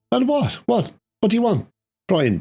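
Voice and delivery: Irish woman's voice. Retelling a scene where a woman calls out to Brian, Irish woman's voice. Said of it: "this Irish woman's voice saying".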